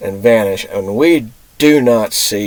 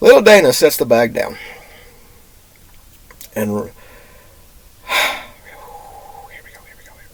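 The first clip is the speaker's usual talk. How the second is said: voice holding back tears. Recounting a childhood memory step by step, holding back tears. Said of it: "I'm going to try not to cry".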